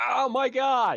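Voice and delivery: very high, loud, agonized scream. Voicing a dragged man as something rips into him: screaming in pain. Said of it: "you just hear him start screaming".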